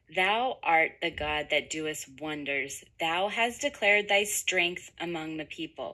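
ordinary delivery

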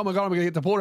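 mock sudden alarm, dread setting in, panicked. Retelling being questioned at the border: imitating own past panic. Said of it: "And then I start panicking".

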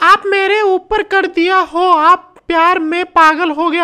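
mock lovestruck voice, high and slow.

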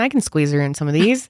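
normal talking voice

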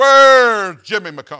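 very loud, booming call-out voice. Retelling the principal calling out a student before the whole school: Don Ballard's booming voice. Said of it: "in a booming voice".

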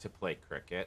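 bone-dry, flat, absolute deadpan, very low, quiet hush. Advising how to answer friends who ask what the new paddle is for, absolute deadpan. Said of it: "You just deadpan, just absolute deadpan".

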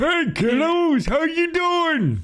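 put-on very high, squeaky old-man voice, swooping all over. Gamer greets his co-players at the start of a Gmod episode, Abe Simpson voice. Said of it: "I'm Abe Simpson, if you couldn't tell".

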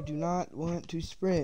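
mocking put-on voice. Asked during play whether they are mimicking her: mimicking her words. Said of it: "that's basically what she said".

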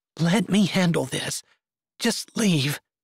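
earnest, begging, pleading tone. She tells Ken to leave her to explain everything alone, begging. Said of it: "she begged".

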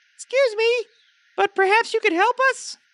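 very high, small, squeaky tiny voice. A storyteller voices a hidden speaker in the underbrush, tiny little voice. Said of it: "this little voice says".

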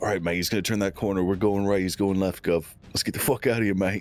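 very low stage half-whisper. Acting out what Dick will half-whisper to Chuck, half-whispering. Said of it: "And Dick will whisper to Chuck".

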